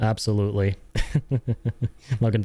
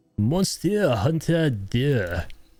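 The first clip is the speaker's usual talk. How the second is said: higher-pitched, put-on anime character voice; 4 semitones higher than usual. Saying a game's name aloud, trying a weeb anime-character voice. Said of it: "like some weeb trying to do an impression of an anime character".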